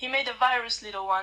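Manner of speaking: usual speaking voice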